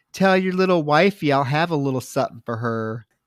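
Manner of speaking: plain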